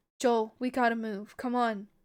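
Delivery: ordinary delivery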